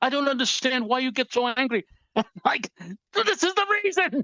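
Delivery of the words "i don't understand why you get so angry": imitated Jamaican accent. Speaker repeats what a man from Jamaica tells him, in a Jamaican accent. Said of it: "a wonderful Jamaican accent".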